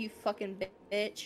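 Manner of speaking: whispered under breath. A player's character answers the woman letting them in: whispered under breath. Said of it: "I whisper beneath my breath".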